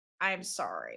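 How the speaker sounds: very quiet, hushed, hesitant, apologetic voice. Retelling how a character finally apologized: imitating a very quiet apology. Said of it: "very quietly is like".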